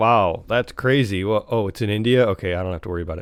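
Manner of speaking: ordinary talk, nothing marked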